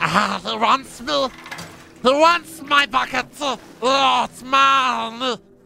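very high creature voice, dragged out very slowly. Asked for a voice while playing a game, speaking in Gollum voice. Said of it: "[name] Gollum voice, please".

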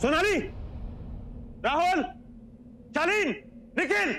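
yelling loudly. Upset first thing in the morning, calling out for the others: shouting names. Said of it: "चिल्ला क्यों रहे हो?".

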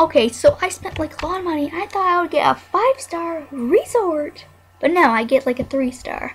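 exasperated venting. A streamer mid-game, talking over a barking dog: frustrated. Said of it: "Sorry, I'm just frustrated".

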